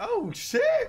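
shocked, high shout, yelled out.

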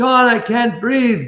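high-pitched screaming. Orderly recounting a patient screaming for him by name, acting out the scream. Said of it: "he's like screaming for me".

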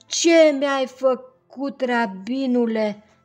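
plaintive, loud, drawn-out, high-pitched lament. Narrator reads a man's line as he hurries back to the rabbi; complaining. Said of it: "S-a plâns el".

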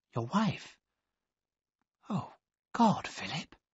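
barely voiced, soft, breathy whisper. She replies to the man who calls himself her husband, whispering. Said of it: "she whispered".

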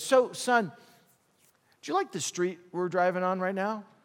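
understated, easy, low-key fatherly tone. Retelling how a father spoke to his upset son: imitating a very quiet voice. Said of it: "he just very, very quietly said".

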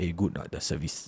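put-on, breathy, hushed whisper. Quoting a friend asking about a girlfriend: changed voice for a quoted friend. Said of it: "your voice changed also".

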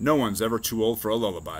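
ordinary delivery

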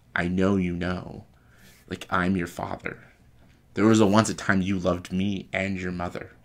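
ordinary talk

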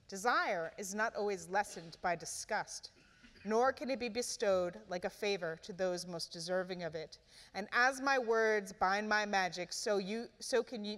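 usual speaking voice

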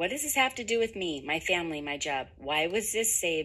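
ordinary delivery

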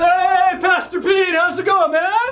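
sudden high, loud calling out.

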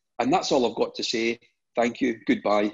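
ordinary talk

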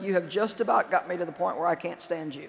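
level, steady, composed, even tone. Recalling smart-mouthing someone, the speaker repeats his reply: imitating a calm, even tone. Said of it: "in an even voice tone".

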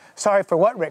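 ordinary talk

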